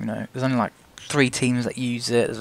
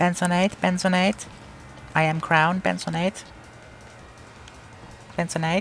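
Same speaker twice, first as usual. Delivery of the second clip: put-on, pitched-up talking-car voice; 7 semitones higher than usual. Giving the car a voice while driving: Crown car's voice. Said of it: "that's the Crown's voice now".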